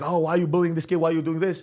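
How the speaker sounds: put-on confrontational, accusing shout. Acting out a passerby accusing someone of bullying a kid: imitating someone yelling. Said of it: "you start yelling at me".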